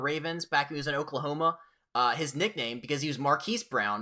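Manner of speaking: plain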